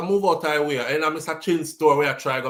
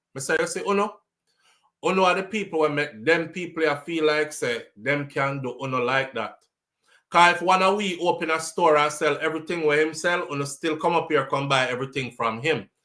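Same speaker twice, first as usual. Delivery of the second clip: normal talking voice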